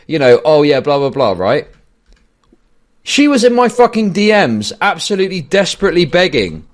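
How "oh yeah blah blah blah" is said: smug, self-satisfied, superior tone. Mocking how she acts on stream: imitating someone smug. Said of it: "she acts so fucking smug".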